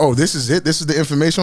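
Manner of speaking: normal talking voice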